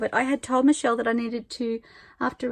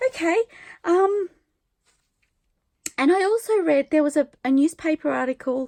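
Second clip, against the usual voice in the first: close to tears, teary, raised and pitched up; 5 semitones higher, 5 dB louder than usual. Talking about reading a book's prologue and an article, teary. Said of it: "now I'm getting teary".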